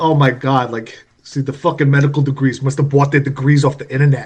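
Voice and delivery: bad, horrendous put-on New York accent. Quoting a character's rant about doctors, in a horrendous New York accent. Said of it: "I have to do my horrendous New York accent".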